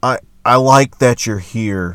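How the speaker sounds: slow, creepy, drawn-out voice. Quoting a professional journalist's dialogue, doing a creepy Gregg Doyel impression. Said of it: "in this creepy voice".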